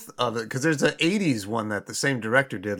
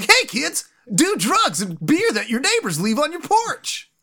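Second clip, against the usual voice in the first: loud, very high-pitched cartoon turtle voice; 13 semitones higher, 5 dB louder than usual. One speaker tells another they can both talk like this: 90s Ninja Turtles voice. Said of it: "talk like the 90s Ninja Turtles".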